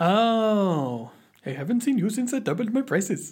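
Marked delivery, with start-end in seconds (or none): 1.4-3.3 put-on Indian accent, pitched higher. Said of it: "That's just an impression of a poo".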